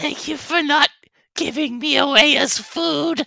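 very high-pitched, pleading whimper. The narrator voices Meepo, still lying belly first on the ground, Meepo whimpering. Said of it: "whimpers and says".

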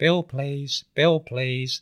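thin reedy voice. Retelling what a café customer said to the waitress: imitating a reedy voice. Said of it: "he said to [name] in his reedy voice".

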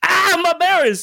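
very high, pained, shrieking scream. Voicing a character whose belly is raked by a sword: screaming. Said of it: "screams as one of the swords rakes".

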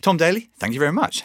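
polished, formal delivery. Redoing the thanks to a guest after being asked: proper formal sign-off. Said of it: "Shall I do a proper".

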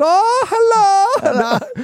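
exaggerated high German accent. Retelling how police at a checkpoint greeted them, imitating a German accent. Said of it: "I'm not doing this accent as a joke".

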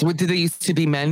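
ordinary talk

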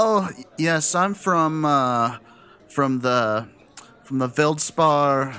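put-on tipsy, drunken slur, words smeared and stumbling. A character sent back to his younger days of debauchery introducing himself, slurring words drunkenly. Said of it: "I'm slurring my words".

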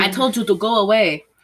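bad put-on Polish accent. Retelling a scene with Sharon Tate, doing Wojtek in a bad Polish accent. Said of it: "that was a bad accent".

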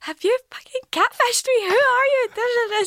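acted-out harsh, very high Scottish-accented screaming. Retelling screaming at a poor man in a car, in a harsh Scottish slang accent. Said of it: "Screaming at this poor man".

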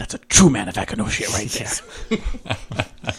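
high, hushed falsetto stage whisper, meant to carry. Player speaks while a departing character is still within earshot, falsetto whisper. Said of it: "I'm going to falsetto whisper".

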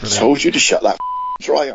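put-on loud American accent with swooping pitch. Reading a line aloud while trying out an American accent. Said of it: "they've just been trying American accents to read that".

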